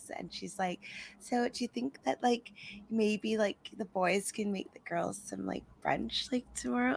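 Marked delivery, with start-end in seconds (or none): 1.2-7.0 put-on sugary, sweet, cutesy little girlish voice. Retelling what Paige asked the boys: imitating a cutesy voice. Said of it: "cutesy voice that she kinda does".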